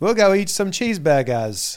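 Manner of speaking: badly put-on American accent. Mocking how british people put on american accents, in a bad fake american accent. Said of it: "a British person pretending to be an American".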